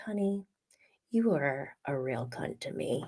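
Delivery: very quiet, silky, smooth, calm delivery. Repeating what Dorit said to another woman in next episode's scenes: Dorit's smooth, calm voice. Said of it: "in a very smooth, calm voice".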